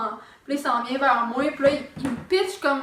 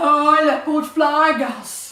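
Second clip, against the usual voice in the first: put-on cooing baby talk, loud; 6 dB louder than usual. Retelling how a man talked to a flower pot: imitating someone using baby talk. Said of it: "il parle comme un bébé, là, au pot de fleurs".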